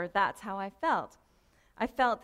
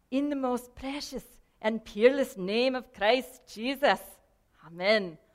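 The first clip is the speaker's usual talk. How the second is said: poor, bad put-on Scottish accent; 2 semitones higher, 4 dB louder than usual. Show how he would always end each prayer, in a bad scottish accent. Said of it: "my Scottish accent isn't good".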